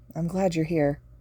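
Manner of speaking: ordinary delivery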